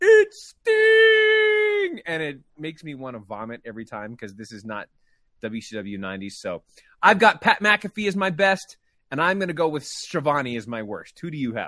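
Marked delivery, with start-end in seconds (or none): 0.0-2.0 shrill, booming high call, word "sting" stretched out. Mocking the worst announcer's ring call, imitating Schiavone's call. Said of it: "he says".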